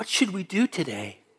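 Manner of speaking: acted cheery, chirpy voice, soft and happy. Retelling what she said while they faked sleep: imitating her happy voice. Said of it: "I hear her happy voice".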